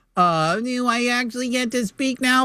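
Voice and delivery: high, drawn-out, whiny, passive-aggressive voice. Told they can speak now, doing it like their mom would: mock-whiny passive-aggressive. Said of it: "doing a whiny, passive aggressive".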